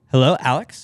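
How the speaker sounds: machine-like, robotic automated caller voice. Retelling an automated phone call greeting: imitating a robot caller. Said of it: "robot ones where it's like".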